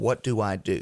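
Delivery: play-acted, slow words pushed out while crying. Retelling what a homeowner said on hearing bad news: retelling someone speaking through tears. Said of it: "through his tears".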